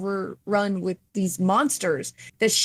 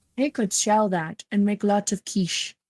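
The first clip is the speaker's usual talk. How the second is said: exaggerated, overdone Scottish accent. Speaker, discussing Wesker's plans, slips into a Sean Connery accent. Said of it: "I put way too much Sean Connery in that accent".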